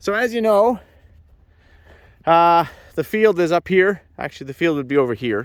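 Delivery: breathless huffing between words. Climbing up to show viewers the pad, the speaker talks while huffing and puffing. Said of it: "Now I'm huffing and puffing".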